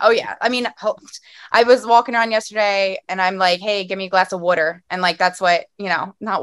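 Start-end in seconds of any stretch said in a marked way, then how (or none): 3.6-4.8 put-on, played-up Philadelphia accent. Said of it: "I'm a Philly girl".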